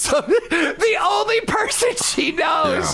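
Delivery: high, slow shout while laughing.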